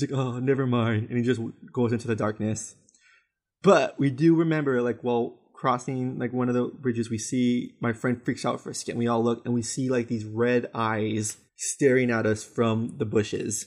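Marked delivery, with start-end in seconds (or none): 0.1-1.1 put-on stoned voice. Retelling what a dude from the bushes said: imitating a stoned guy. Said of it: "really stoned".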